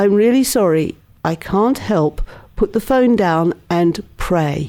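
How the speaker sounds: ordinary talk, nothing marked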